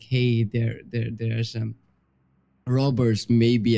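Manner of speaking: normal talking voice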